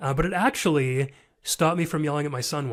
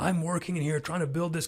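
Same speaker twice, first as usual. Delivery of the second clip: acted-out yelling; 2 semitones higher, 4 dB quieter than usual. Retelling how he once yelled at his wife about his son: retelling his own yelling. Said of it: "I can remember just yelling at him".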